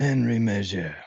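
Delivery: name pronounced the French way, French accent. Asked to say a name again with the French accent: French accent. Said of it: "that French accent again?".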